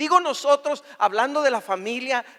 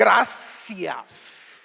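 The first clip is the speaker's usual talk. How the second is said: gracias said sarcastically, meaning its opposite; 4 semitones lower than usual. Explaining thanks said without gratitude, a sarcastic gracias. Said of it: "sarcásticamente".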